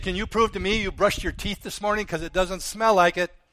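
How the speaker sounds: dry, needling, sarcastic, smart-aleck tone. Retelling a reply to people who ask for proof: retelling a sarcastic retort. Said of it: "I'm just kind of a sarcastic smart aleck sometimes".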